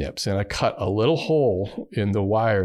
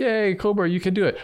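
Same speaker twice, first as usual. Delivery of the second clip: high-pitched cheering, encouraging tone. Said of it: "I'm like".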